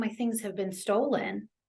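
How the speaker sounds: normal talking voice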